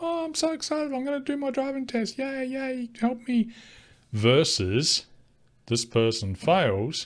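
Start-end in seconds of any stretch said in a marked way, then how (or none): 0.0-3.5 very high, bubbly, gushing excitement. Imitating a new student who is happy and excited: imitating an excited student. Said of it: "happy, excited".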